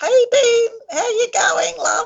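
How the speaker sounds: put-on high-pitched old-grandma voice. Asked to do a grandma's voice for Dean, greeting him in a grandma voice. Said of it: "could you do a grandma's voice for Dean?".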